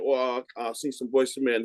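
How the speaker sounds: plain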